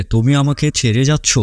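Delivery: plain reading voice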